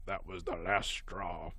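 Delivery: low, slow, soft mutter under the breath. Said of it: "heard him mutter under his breath".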